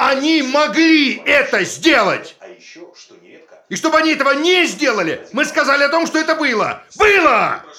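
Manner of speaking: shouting. In a scene, after being told not to shout, still shouting. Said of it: "Не кричи!".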